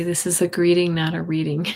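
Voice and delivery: ordinary talk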